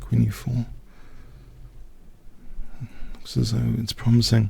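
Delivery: soft, hushed whisper. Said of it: "why I'm whispering".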